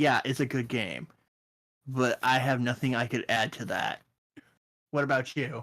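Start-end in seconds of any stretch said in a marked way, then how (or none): none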